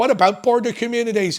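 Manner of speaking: phrase in Irish accent. Speaker saying a phrase he can never say without an irish accent. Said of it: "I can never say say the phrase border communities without saying it in an Irish accent".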